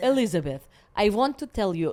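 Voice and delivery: put-on Israeli-accented speech. Imitating her dad saying her name: imitating her dad's Israeli accent. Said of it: "is like that".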